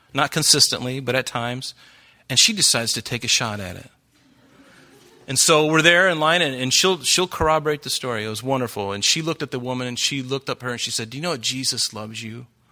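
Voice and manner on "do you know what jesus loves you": mock-tender, imitated tender voice, much quieter. Retelling what a woman in line said to another woman, imitating a tender voice. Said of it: "she said it real tenderly like that".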